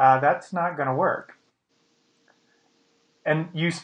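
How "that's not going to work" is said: normal talking voice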